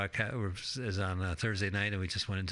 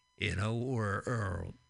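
usual speaking voice

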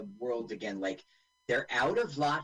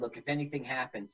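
plain

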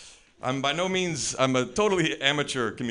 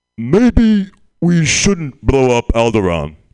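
put-on very loud, booming, stoned villain voice; 15 dB louder than usual. Doing a stand-up impression of a character smoking weed: Darth Vader smoking weed.

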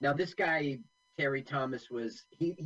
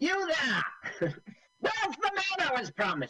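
put-on high-pitched, posh, old-fashioned English officer voice. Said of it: "Are you doing your Terry Thomas impersonation?".

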